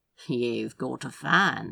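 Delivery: deadpan, dry, low aside. After a woman recognises his companion and rushes out, a man makes a dry remark.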